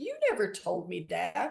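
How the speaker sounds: normal talking voice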